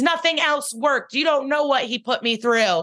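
high, screaming outburst, acted out. Retelling a scene where a handcuffed woman screams at Benson, retelling a scream. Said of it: "And she screams".

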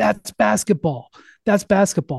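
half-shouted, insistent, emphatic mild yell. Retelling a player walking to his bench during a timeout: imitating someone screaming. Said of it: "he was screaming".

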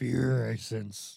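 put-on creaky, raspy old sage voice, words in reversed order. Acting out Yoda's words while retelling the Jedi story: Yoda voice. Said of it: "That was really good".

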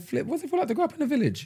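high, soft, curious tone. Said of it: "I'm thinking".

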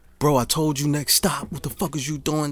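put-on screaming. Retelling a passenger yelling at the bus driver: imitating someone screaming. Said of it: "starts screaming at the driver".

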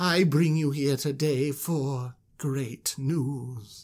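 slow, grand, supremely eloquent oratory, drawn out. Retelling the Moses story, Aaron addressing the gathered elders: supremely eloquent Aaron voice. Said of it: "with just, like, supreme eloquence".

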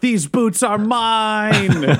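very slow, high yell with mine stretched long. Narrating a character who leaps and yells a claim to the boots: yelling. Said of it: "he just yells".

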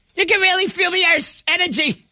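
put-on very high, shrill, screaming yell in East Coast accent. Mocking how Bostonians and New Yorkers would say it, imitating East Coasters screaming. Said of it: "they're screaming it".

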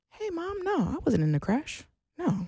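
exaggeratedly calm, very high sing-song voice. Retelling answering her mom's call about a reported crash; retelling acting overly calm. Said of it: "I'm talking so calmly. I'm talking like this".

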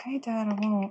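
very hushed, quiet mutter under the breath. In a tabletop game, a player's character answers dad, muttering under breath. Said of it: "You hear me say under my breath".

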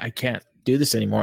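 ordinary delivery

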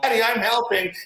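put-on high little-girl yell. Describing a four-year-old daughter brought to work: imitating a little girl yelling. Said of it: "and she's yelling".

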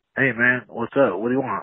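mock-gangster, rude phone-style voice. A caller complains about how Hawk answers the show's phone: imitating Hawk answering the phone. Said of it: "He answers the phone like he's a shit".

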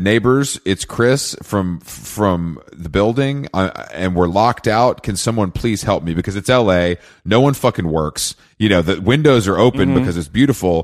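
ordinary delivery

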